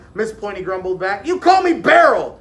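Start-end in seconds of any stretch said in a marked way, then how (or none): 1.3-2.3 very loud, high-pitched yell. Narrator reads Daryl answering his teacher Miss Pointy: yelled. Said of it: "yelled Daryl".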